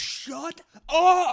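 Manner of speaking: angry, high-pitched shout at full volume. Retelling a video where someone yells at another person: imitating someone yelling. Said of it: "he's just yelling at the dude".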